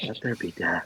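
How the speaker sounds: very quiet mumble under the breath. Playing Zevin reading an inscription aloud: saying it under his breath as Zevin. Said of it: "Zevin says it out loud under his breath".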